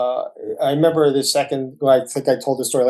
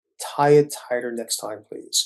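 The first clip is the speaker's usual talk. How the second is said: quiet, hushed half-whisper under the breath; 3 dB quieter than usual. Retelling what the doctor said after a suture came off: imitating a half-whisper. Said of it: "he leaned over and whispered".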